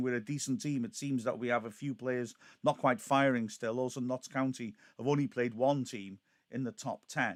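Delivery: normal talking voice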